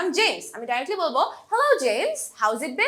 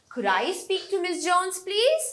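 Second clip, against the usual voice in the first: rising tune, low to high on please; 3 semitones higher than usual. Teaching English request intonation, saying a request with rising intonation. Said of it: "লো টু আপ intonation, rising intonation.".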